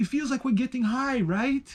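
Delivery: put-on German accent. Quoting what she said to the speaker, in a German accent. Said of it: "in a German accent".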